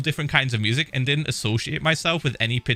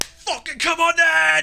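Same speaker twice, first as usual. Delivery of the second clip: play-acted, very high, drawn-out full-lung scream; 4 dB louder than usual. Retelling how a goth answered twenty attackers: imitating a scream at top of lungs. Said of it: "screamed at the top of his lungs".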